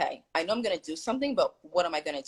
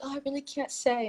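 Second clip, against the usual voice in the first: stammering, high, very fake helpless damsel-in-distress voice; 8 semitones higher, 5 dB quieter than usual. Retelling a barista's answer about calling the cops, in a fake damsel-in-distress voice. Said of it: "in a very fake damsel in distress type of voice".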